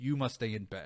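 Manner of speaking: firm, falling downward inflection on "bed". Telling someone they must stay in bed, downward inflection on bed. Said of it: "with like a downward inflection in your voice".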